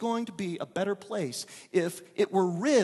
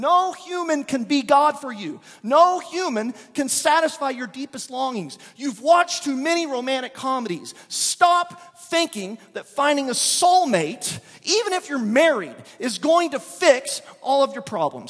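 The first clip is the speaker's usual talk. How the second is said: anger building, raised, high-pitched heated rant; 6 semitones higher, 8 dB louder than usual. Speaker lecturing listeners, getting mad. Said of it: "Sorry, I'm getting mad".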